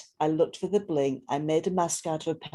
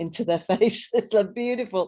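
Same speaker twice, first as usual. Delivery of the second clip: raised, high-pitched talk through laughter; 5 semitones higher, 5 dB louder than usual. Speaking to a group, noticing a participant's cat, laughing while speaking. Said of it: "I'm laughing at one of".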